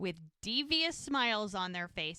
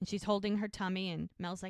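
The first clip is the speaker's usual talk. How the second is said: usual speaking voice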